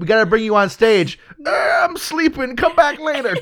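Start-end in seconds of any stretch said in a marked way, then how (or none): 1.5-3.4 high-pitched, dismissive brush-off voice. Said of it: "my excellent Kirk Douglas impression".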